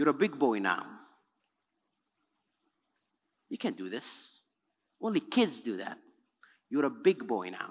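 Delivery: gentle, hushed, very low tone. Retelling what they told a boy who kept writing on the wall, said softly. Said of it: "I said softly".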